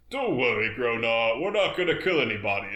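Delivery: ordinary talk, nothing marked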